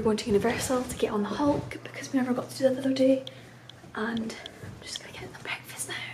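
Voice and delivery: hushed whisper. Narrating the morning's plans before getting them breakfast, whispering. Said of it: "Don't know why I'm whispering".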